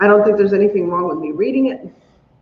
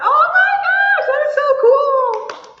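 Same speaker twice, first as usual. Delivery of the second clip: very high, slow, joyful tearful gush. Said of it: "Don't cry".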